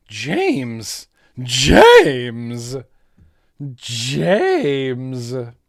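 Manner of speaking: smitten, lovestruck, moony, low-pitched and swooping. Doing an impression of someone with a crush: imitating a smitten admirer calling james. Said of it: "my impression of a, someone who has a crush on a guy named James".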